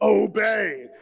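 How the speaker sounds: "obey" barked forcefully, mock-angry. Preaching on Ephesians, showing parents how to say it: forceful, angry Obey. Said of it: "You got to say it like that. ... let that little rage come out".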